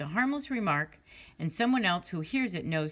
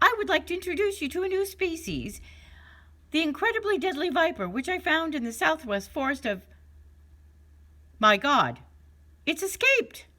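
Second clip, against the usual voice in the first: very high, goofy, silly scientist voice; 12 semitones higher, 4 dB louder than usual. An uncle rehearses his conference prank on his colleagues, in a silly scientific voice. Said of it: "began talking in a silly scientific voice".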